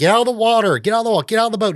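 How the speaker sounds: mock shrill, very high-pitched, repeated yelling. Retelling a movie scene where a character yells: imitating someone yelling. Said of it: "yelling at him".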